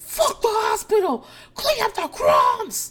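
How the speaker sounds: screaming, very high, shrill, swooping and drawn-out. Retelling a quarrel scene, imitating Renee screaming. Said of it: "And Renee screams".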